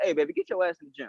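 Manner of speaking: crude, bossy, blunt and rude tone. Showing the wrong way to tell a partner to exercise: blunt rude demand, mock example. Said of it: "Don't say it like how I just said it".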